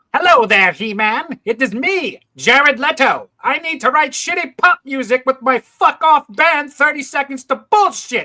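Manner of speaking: put-on cartoon villain voice. Joking about Jared Leto playing Skeletor, doing the Skeletor voice. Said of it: "The Skeletor voice".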